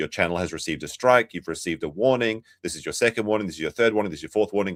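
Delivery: plain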